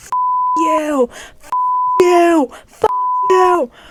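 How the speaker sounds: mock very slow, swooping, loud, high, full-throated yell. Retelling how a man described screaming at someone: imitating someone yelling. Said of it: "I was yelling".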